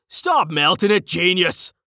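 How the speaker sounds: high shout broken up with laughter. Narrator voices a character yelling after another being pulled away, yelling while laughing. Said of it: "Carten yelled, laughing".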